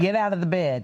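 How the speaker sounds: normal talking voice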